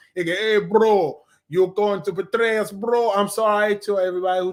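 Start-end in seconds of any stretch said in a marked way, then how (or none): 0.3-3.1 slow, terrible put-on Russian accent. Quoting a bunch of Russians in tracksuits from the comics: terrible Russian accent. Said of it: "That was a terrible Russian accent".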